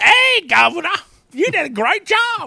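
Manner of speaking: exaggerated put-on British accent, very loud, slow.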